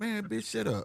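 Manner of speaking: quiet, hushed, held-back dismissive tone. Retelling how he first answered her: imitating someone saying it real low. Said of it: "He said like that real low".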